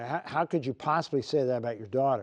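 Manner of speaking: usual speaking voice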